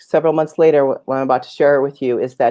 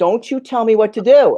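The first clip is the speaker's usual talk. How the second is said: furious, raised, pitched-up angry yelling outburst; 8 semitones higher than usual. Retelling losing it at a coach: imitating own past yelling. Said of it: "I started yelling at him all over again".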